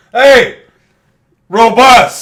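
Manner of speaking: very high, very loud, booming, shrill yell. Urging someone to say a word the way they yelled at a fox: imitating a yell at a fox. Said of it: "Say it in that voice you yelled at the fox".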